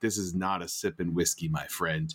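put-on bone-dry deadpan, low and matter-of-fact. Retelling what a friend said about the whiskey: Corey Radisevich dry humor. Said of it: "the Corey Radisevich, uh, dry humor".

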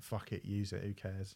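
put-on flippant, dismissive, offhand throwaway delivery. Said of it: "then gone".

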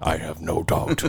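low, soft delivery. Doing an impression of a caller, getting it low: imitating Chainsaw. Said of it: "I'm getting good at that".

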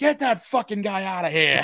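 put-on pissed-off shout. Retelling a comedian having a heckler thrown out: imitating George Carlin yelling angrily. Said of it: "he got real pissed".

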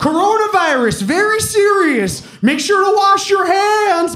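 recorded announcement voiceover, pitched very high. Retelling a video where a voiceover kept coming on, imitating a recurring voiceover. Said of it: "this voiceover would come on and just be like".

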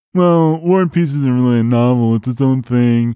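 mocking parody voice. Speaker acts out the other speaker's expected argument, mocking caricature voice. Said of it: "caricature everybody's contrary opinions".

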